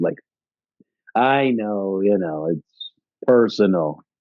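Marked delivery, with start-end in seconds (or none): 1.1-3.9 slow, playful, teasing, lighthearted tone. Retelling Sisko's playful answer to her: imitating a playful reply. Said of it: "His response was also playful".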